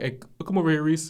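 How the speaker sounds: put-on raspy old-man voice. Retelling a middle-school football game as the coach calls the speaker over, imitating coach's raspy voice. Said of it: "he has one of those raspy voices".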